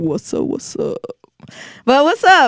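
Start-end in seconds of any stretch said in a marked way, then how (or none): 0.0-1.0 badly done, hushed, breathy put-on voice.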